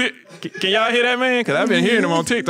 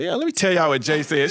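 normal talking voice

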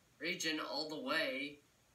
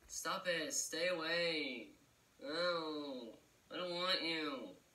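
put-on sulky bratty kid voice, drawn-out "oh". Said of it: "I sound like a bratty kid".

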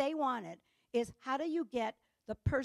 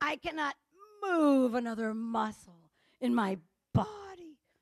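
put-on sensual relish, slower; 4 dB louder than usual. Acting out a woman telling another woman she is exhausted, imitating sensual relish. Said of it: "It's almost sensual".

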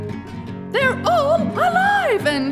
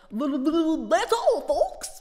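stammering, lower, quieter and slower; 4 semitones lower, 4 dB quieter than usual. Speaker saying goodbye to online followers: stammering.

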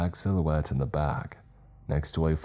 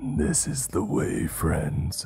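harsh, guttural, cracking creature voice. A narrator reads a creature speaking to the group at the stairway, guttural, cracking voice. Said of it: "it said to us in a guttural, cracking voice".

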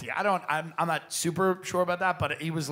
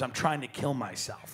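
put-on grave, earnest, dead-serious tone; 3 semitones lower, 6 dB quieter than usual. Retelling what Bud said after the boat crash: imitating Bud saying it very seriously. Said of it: "he said it very seriously".

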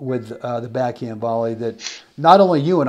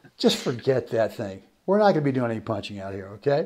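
mock-amused, dismissive tone spoken through chuckling laughter; 3 semitones lower, 6 dB quieter than usual. Retelling what Mister Stowe answered about punching: imitating Mister Stowe chuckling. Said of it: "chuckled and laughed and go".

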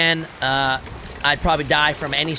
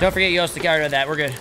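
plain

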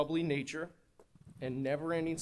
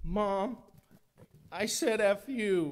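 mock very slow, high, small, meek, tearful whimper; 7 semitones higher, 6 dB louder than usual. Retelling how he confessed to Mom on the phone, imitating a meek crying voice. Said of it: "in this meek, crying little voice".

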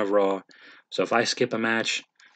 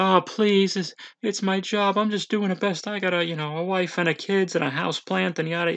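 mock over-the-top blubbering, very high, whiny, comical pleading; 9 semitones higher than usual. Retelling how a scared referee pleaded: imitating comical whining and crying. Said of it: "almost comically whining and crying".

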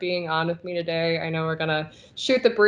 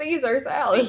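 fake, exaggerated American accent, much higher; 7 semitones higher than usual. Explaining to the other podcast guest why they said it that way, exaggerated american accent. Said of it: "why did you say Caesar in an American accent?".

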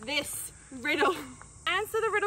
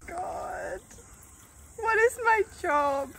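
mumbling, muttering under breath; 4 dB louder than usual. While others wait to hear the chainsaw, muttering to herself. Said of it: "(Phoebe muttering)".

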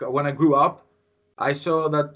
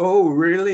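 snide, teasing, mocking, sarcastic tone; 4 semitones higher, 4 dB louder than usual. Retelling how classmates mocked someone's British accent: imitating classmates mocking. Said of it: "doing this kind of mocking".

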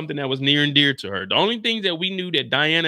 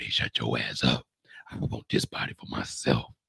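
put-on serious voice, lower and quieter; 8 dB quieter than usual. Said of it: "Let me turn on my Diana serious voice".

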